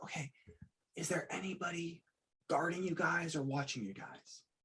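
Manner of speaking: very quiet, cautious, under-the-breath hushed voice. Speaking to hidden children in character: very quiet voice. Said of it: "I'm gonna very quietly just go like".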